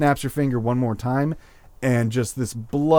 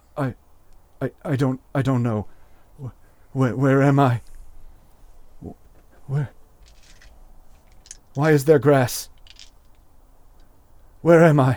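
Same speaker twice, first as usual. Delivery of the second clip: terrified, frightened voice. A storyteller voices an orc guard asked where he came from, terrified. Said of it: "with just terror in his eyes and says".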